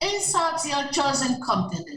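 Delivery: ordinary delivery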